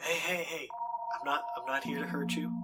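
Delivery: very quiet, softened voice. Speaking to whimpering figures cowering in the corner, in a lowered voice. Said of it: "I lower my voice".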